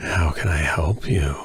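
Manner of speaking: low, slow, husky, sickly sounding whisper.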